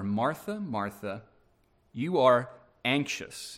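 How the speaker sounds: soft gentle tone. Retelling how he answers a woman's plea, retelling a gentle reply. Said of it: "He very gently says to her".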